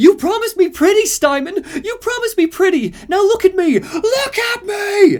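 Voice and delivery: put-on very high, shrill woman's yell. Retelling a game scene where a woman bangs on a door: imitating a woman yelling. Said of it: "and she yells".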